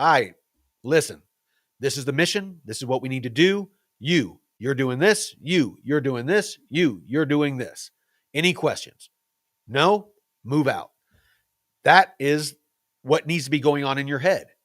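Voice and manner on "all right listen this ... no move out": put-on calm, cool, collected leader voice. Acting out a calm, collected combat leader giving orders: acting as a calm, collected leader. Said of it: "one that's calm, cool, collected, and is like".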